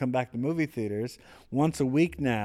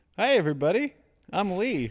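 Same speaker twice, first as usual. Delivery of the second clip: pitched-up, copycat echoing delivery; 6 semitones higher than usual. During a podcast intro, a speaker mimics another's greeting: imitating Lee DeMarb. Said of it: "I was imitating you".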